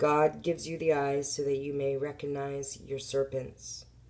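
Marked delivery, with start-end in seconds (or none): none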